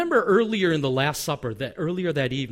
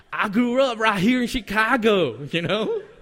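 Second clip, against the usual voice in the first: bad amateur Southern American accent, pitched higher; 5 semitones higher, 3 dB louder than usual. Retelling a Bible story about Peter, the speaker tries a bad Southern accent. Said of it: "I don't have a good Southern accent".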